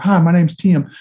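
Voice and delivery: mild-mannered, gentle, unassuming voice. Telling about a colleague, the speaker imitates him introducing himself, soft-spoken Coach Tim impression. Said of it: "He had a very soft-spoken voice".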